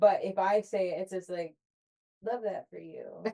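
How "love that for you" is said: condescending, patronizing manner. Showing how the phrase usually comes out when said: condescending. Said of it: "I'm usually saying it in a condescending way".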